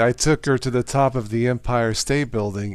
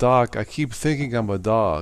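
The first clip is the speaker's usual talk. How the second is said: ordinary talk, nothing marked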